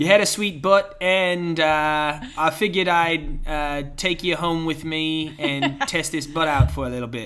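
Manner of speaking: loud, slow, drawn-out put-on New Zealand accent. Retelling a partner's version of the story: imitating Taz's Kiwi accent. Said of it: "that's my Taz accent".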